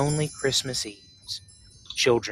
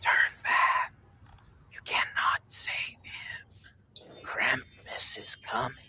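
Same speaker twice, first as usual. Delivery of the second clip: hushed chorus of whispered voices; 3 dB quieter than usual. Voicing whispers heard in a cold cavern: whispering voices. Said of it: "you began to hear whispering".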